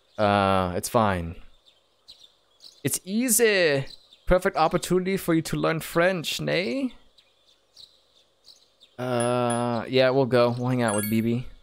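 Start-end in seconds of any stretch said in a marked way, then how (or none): 4.3-7.0 b b in a put-on German accent. Voicing the game character B B inviting the player to the movies: put-on German accent for B B. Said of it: "a French-German man".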